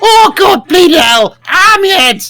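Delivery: stretched-out, slow, very high goblin squeal. Game master describing a sound George hears, in a goblin voice. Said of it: "It sounds like a goblin going".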